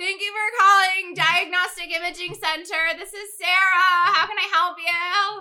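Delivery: high, nasal, loud phone voice. Imitating herself answering calls at work: nasal, high-pitched phone voice. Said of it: "much more nasally and high pitched".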